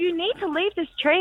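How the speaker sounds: high, frantic, hysterical pleading tone. Retelling screaming at her parents to stop cutting a tree: imitating her hysterical pleading. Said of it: "absolutely hysterical".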